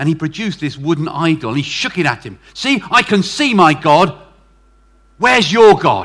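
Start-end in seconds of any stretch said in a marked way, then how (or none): 2.5-6.1 slow, very loud, furious, taunting tone. Retelling a story where a man confronts Augustine: imitating an angry man. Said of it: "was quite angry with him".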